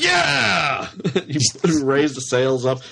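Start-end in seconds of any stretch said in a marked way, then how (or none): 0.0-0.9 high, loud cheerleader-style cheering yell. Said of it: "I'm like".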